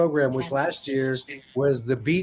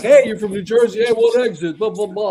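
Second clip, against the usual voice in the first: sudden New Jersey accent, raised and pitched up; 7 semitones higher, 7 dB louder than usual. Acting out meeting someone from New Jersey: New Jersey accent. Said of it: "I meet someone like".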